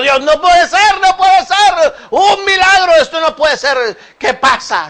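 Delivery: frightened, astonished crowd outcry. Telling the Lazarus story, voicing the crowd at the tomb, acting out a frightened crowd. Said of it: "echó de para atrás asustado".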